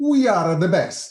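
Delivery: put-on loud Italian accent. Retelling what a man says after taking euros from an ATM, Italian accent. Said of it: "dice con acento italiano".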